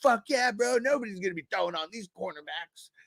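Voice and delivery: hyped, stoked bro-style cheer.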